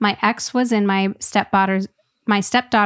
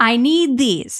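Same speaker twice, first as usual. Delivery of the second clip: put-on proud, proclaiming tone; 3 semitones higher than usual. Reading a comment aloud, quoting a dad at the cashier: imitating a proud proclamation. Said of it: "proudly proclaiming".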